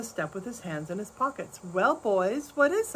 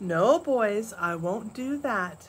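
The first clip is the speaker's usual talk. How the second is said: calm, unruffled, cool and very slow delivery. Pa answers a crowd yelling at him to open the store, cool. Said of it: "Pa said coolly".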